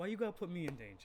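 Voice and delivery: teasing, playful, jokey tone. Voicing a character complaining in a joking tone. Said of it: "in the last bit of their joking tone".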